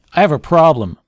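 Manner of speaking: angry, loud complaining. Showing how an angry tone of voice triggers a listener's fight-flight response: angry tone. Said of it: "So if I angrily say".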